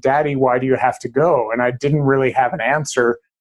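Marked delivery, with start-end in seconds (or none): 0.0-1.5 put-on voice of a little toddler girl. Father recalling his daughter asking as he left for Everest, Lila's little-girl voice. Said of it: "in a little two and a half year old girl's voice".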